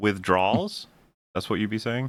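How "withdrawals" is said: attempted American accent. Comparing how a word is pronounced with the other speaker: trying an American accent. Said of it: "if I try my American voice".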